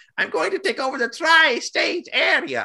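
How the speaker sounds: very high cartoon voice with swooping pitch. Describing a cartoon character to others: Doofenshmirtz voice. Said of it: "that's how it sounds like to me".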